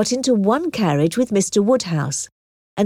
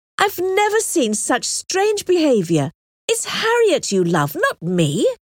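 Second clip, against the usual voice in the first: firm, resolute, no-nonsense, pitched a little high; 6 semitones higher than usual. Emma answers Mr. Elton, firmly. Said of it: "said Emma firmly".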